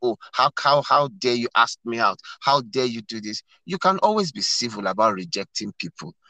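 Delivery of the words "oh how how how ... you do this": ordinary talk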